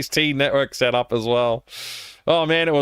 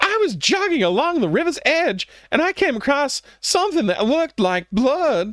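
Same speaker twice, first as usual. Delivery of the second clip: very high, excited, worked-up voice; 12 semitones higher than usual. Narrator reads a young jogger telling what she found: excited voice. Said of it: "in an excited voice".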